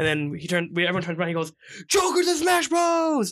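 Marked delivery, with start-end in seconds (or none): 1.9-3.3 put-on very high, very slow, drawn-out loud shriek. Retelling a stranger at a store midnight release: imitating someone screaming. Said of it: "He just starts screaming out the top of his lungs".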